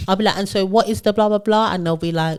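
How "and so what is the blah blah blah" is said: acted, irritating, annoying bossy manager tone. Retelling questioning juniors at work: imitating own annoying manager tone. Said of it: "in my annoying manager bag".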